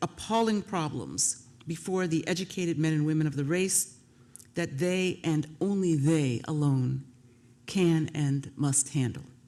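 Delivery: ordinary delivery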